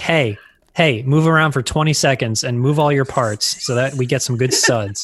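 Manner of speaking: normal talking voice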